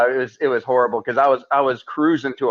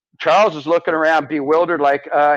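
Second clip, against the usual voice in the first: normal talking voice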